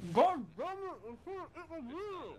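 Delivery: very high, spoken with mouth full of food. Exclaiming while still eating a burrito, talking with mouth full. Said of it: "he's got food in his mouth and he's trying to talk".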